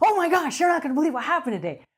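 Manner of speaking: gushing, thrilled, really excited, fast and swooping. Example of how not to read it aloud before sleep: really excited delivery. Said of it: "don't read it in a really excited state of mind, like".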